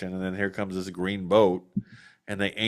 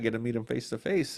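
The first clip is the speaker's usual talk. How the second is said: put-on excited voice, higher; 3 semitones higher, 4 dB quieter than usual. Retelling meeting a fishing acquaintance on the river: retelling own excited words. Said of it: "I was all excited".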